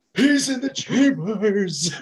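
put-on very high, feeble old voice with no carry. Retelling a TV scene, imitating the old man keeping peace in the senate. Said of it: "That's a great impression".

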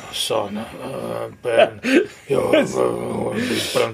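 put-on gruff movie hero voice. Doing an impression for another speaker: Han Solo impression. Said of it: "Very good Han Solo".

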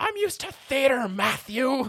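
very high, loud shouted yell. Recounting a mishap on set before the director's call, imitating Tim yelling. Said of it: "And then Tim just yells".

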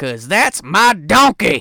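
loud, slow, gruff man's shout. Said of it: "a gruff man going".

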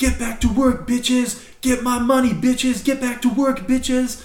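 very high-pitched screaming. Telling a story, the speaker acts out a man with a gun below the window, retelling a man screaming. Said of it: "he's screaming".

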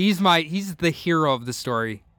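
ordinary delivery

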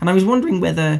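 cracking voice. Starting a question about Dungeons & Dragons, voice cracking. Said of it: "my voice cracked".

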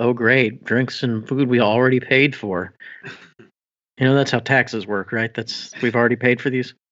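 mumbled, grumbling aside to himself. Speaking as their character after free meals are offered, muttering under his breath. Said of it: "sort of mutters under his breath".

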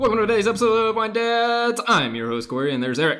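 breakneck pace, pitched very high and loud. A host opens the show's episode, introducing himself and his co-host, way too fast. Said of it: "that was way too fast".

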